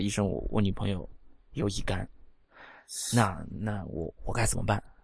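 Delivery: low, hushed, secretive murmur. Acting out a young patient speaking to a doctor, voice lowered to a hush. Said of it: "压低声音说".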